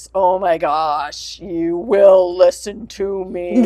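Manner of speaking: play-acted, deep, grave, dead-serious stern voice. Retelling how she made someone listen to her, in a booming super-serious voice. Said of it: "I had to do the booming, super serious".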